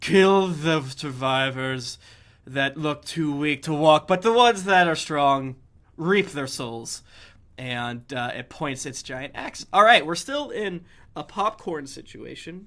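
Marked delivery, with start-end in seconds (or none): 0.0-7.0 loud, almost hollow-sounding voice. Narrating a game scene for the players, voicing a creature in an almost hollow voice. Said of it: "almost hollow voice".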